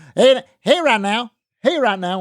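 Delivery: put-on big, heavy Texas accent, very high. Retelling how Gibson answered the studio phone: big Texas accent. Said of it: "with that big Te-, Texas accent".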